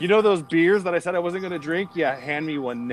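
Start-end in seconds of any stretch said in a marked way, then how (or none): none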